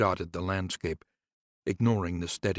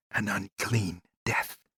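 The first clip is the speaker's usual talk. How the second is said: hissed, sibilant, snake-like voice. Narrator reads a familiar's reply to its master's question, in a hissing voice. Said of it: "a hissing voice replied".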